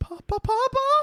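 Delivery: very high, slow, drawn-out desperate call. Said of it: "it's an American Tale".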